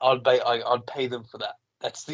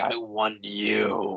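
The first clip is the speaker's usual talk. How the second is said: rough, unsettling gravelly rasp, you drawn out; 3 semitones lower, 3 dB quieter than usual. Retelling a game villain's line: imitating a gravelly Mad Hatter voice. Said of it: "his voice was so gravelly".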